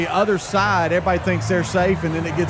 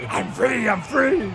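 high, slow bull voice; 5 semitones higher than usual. Voicing an escaped bull at a rodeo: put-on bull voice. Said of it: "is that your voice of the, of the bull?".

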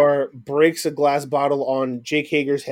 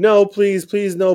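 high, fake crying and sobbing; 6 semitones higher than usual. Describing MJF cornered in an inner circle beatdown, imitating MJF fake crying. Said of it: "He's fake crying".

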